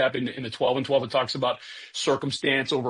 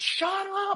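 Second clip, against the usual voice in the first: very high, play-acted, sudden blurted shouting outburst. Asking an audience about arguments in your head: imitating a shout. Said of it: "you had to shout out loud".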